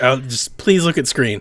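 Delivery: words strung together with no gaps. Imitating a translator who was far behind: imitating a rushed translator, very fast. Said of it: "she said it so fast that, like, there was no spaces in between the words".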